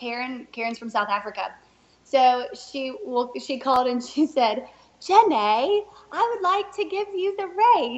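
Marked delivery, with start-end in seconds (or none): 5.0-8.0 put-on, sweet British accent, much higher. Retelling a phone call offering the speaker the race: Karen's sweet British accent. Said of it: "in this sweet British accent".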